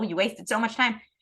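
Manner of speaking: ordinary delivery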